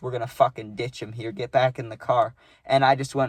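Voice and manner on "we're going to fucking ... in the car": put-on whispering voice. Retelling a friend whispering a plan in the speaker's ear: imitating a whisper. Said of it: "he whispers in my ear".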